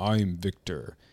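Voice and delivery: put-on deep south American accent.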